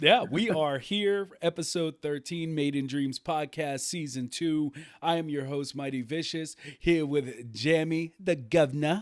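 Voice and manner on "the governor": fake, mock English accent. Podcast host introducing his co-host on air, in a put-on English accent. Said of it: "Don't give me that accent".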